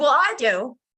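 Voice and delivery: mock bursting with wound-up, hyper, excited energy. Retelling own reply to someone lost for words: imitating own hyper excited tone. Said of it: "on this, like, hyper kick".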